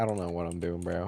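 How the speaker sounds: ordinary delivery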